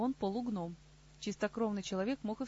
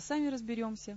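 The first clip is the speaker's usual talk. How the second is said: ordinary delivery, nothing marked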